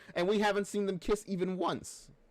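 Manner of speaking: voice cracking up very high. Talking about fan compilations of them kissing: voice cracking. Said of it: "My voice cracked there".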